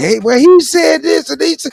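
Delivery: put-on very high, squeaky, childlike voice. Scolding an elder in an argument, imitating his children: imitating his children. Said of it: "You sounded like my children when they say".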